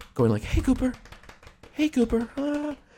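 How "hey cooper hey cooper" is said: all-excited, very high-pitched call. Retelling a coworker coming in to greet the dog: imitating an excited greeting. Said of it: "come in all excited".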